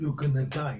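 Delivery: ordinary talk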